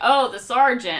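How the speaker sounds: mock sarcastic tone. Imitating family members saying a nickname: imitating a sarcastic tone. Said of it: "in a sarcastic, like, not good tone".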